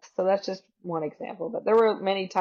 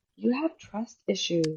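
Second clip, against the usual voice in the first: mock concerned tone, feigned worry. Retelling how the partner clutched his chest and said: imitating feigned worry. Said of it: "clutch his chest and say".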